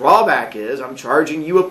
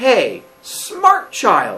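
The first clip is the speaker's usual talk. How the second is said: mock sarcastic, swooping tone; 5 semitones higher than usual. A teacher retells his reply to students confused about a homework due date, retelling a sarcastic reply. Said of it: "said sarcastically".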